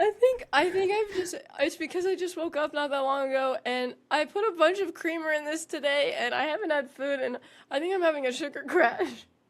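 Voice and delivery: giggly rambling, laughing through the words. Answering right after being told she's just dying, giggly. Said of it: "giggles from your sugar crash".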